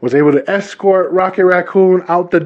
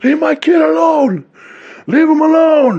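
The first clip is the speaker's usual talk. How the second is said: put-on very high, slow, drawn-out yell; 11 semitones higher than usual. Retelling how a dad yelled outside at an unseen threat: imitating dad yelling. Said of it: "he's just yelling".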